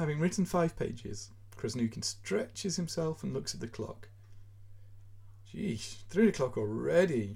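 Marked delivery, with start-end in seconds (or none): 5.5-7.4 moaned, groaned-out words. Krasnoukin, after writing five pages, looks at the clock and groans. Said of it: "he groans".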